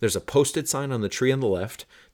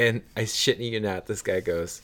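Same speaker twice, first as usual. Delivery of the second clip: usual speaking voice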